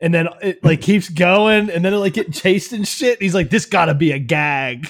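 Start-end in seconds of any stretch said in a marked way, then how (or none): 3.5-4.9 bad put-on Australian accent, much slower. Retelling what a man keeps saying as things happen around him, terrible Australian accent. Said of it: "in my terrible Australian voice".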